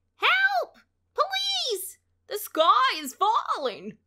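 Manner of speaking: very high, swooping, drawn-out wail of alarm. Narrator reads three birds calling out together, wailing. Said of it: "the three birds wailed".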